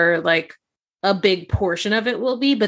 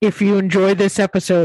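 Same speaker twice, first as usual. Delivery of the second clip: put-on villain voice; 4 dB louder than usual. Host doing the episode sign-off, asking the co-host about it, Darth Vader voice. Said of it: "Do I sound like Darth Vader?".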